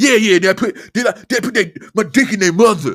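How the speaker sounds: put-on very loud, high-pitched, boastful show-off teen voice. Retelling how a guest talked: imitating a boasting fifteen-year-old. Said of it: "He talked like a fifteen-year-old that's trying to impress everybody".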